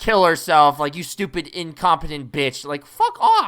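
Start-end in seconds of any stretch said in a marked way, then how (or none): 0.9-2.6 furious, nasty, angry voice. Retelling how a customer insults a waitress: imitating an angry customer. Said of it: "why are you mad at her?".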